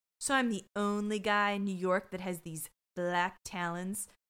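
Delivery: ordinary talk, nothing marked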